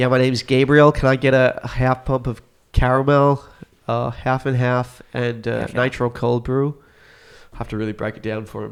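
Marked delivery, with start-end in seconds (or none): 0.0-6.8 exaggerated, thick Australian accent, laid on heavy, drawn out. Retelling ordering at a coffee shop: exaggerated Australian accent. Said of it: "I'd turn the accent up to a hundred fifty percent".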